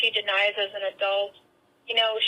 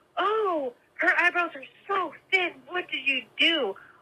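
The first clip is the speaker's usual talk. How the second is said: loud, high-pitched voice; 6 semitones higher than usual. Retelling a mom's remark about eyebrows to a boyfriend: imitating mom talking loudly. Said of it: "out loud saying".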